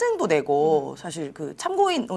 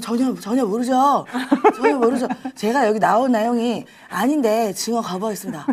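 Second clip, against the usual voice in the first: put-on slow, slurred, peeved, annoyed voice; 3 semitones higher than usual. Trying out a new version of an impression: slurred, mock-irritated imitation voice. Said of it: "이런 식".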